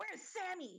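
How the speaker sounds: shrill shout pitched way up. A narrator voices a character pushing through the group once the door closes, yelling. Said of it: "he pushes through the group and yells".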